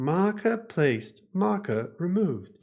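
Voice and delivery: high, slow, robotic game announcement voice.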